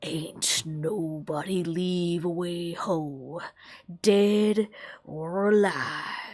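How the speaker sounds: low, dropped hissing voice. A storyteller voices a skeletal woman's line, in a low hiss. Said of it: "she hisses in a low voice".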